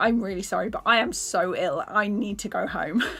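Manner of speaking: mock-tearful crying voice. Speaker recounting telling organisers they were too ill and needed to go home, retelling a tearful apology. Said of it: "I cried".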